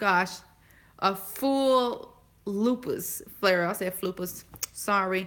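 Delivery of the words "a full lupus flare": "full lupus flare" said slowly, each word carefully spaced. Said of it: "Not flupus".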